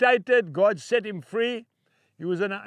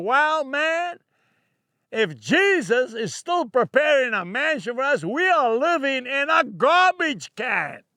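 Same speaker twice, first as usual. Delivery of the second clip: put-on pleasant, unhurried American accent; 4 semitones higher than usual. Quoting a man's remark from a sermon: american accent. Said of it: "in that lovely American accent".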